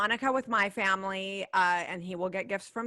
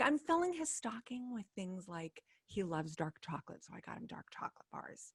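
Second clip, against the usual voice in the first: hushed, quiet, kept-down voice; 10 dB quieter than usual. Talking to a co-host while he's in the next room, talking quietly. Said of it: "I'm talking quietly because he's in the next room".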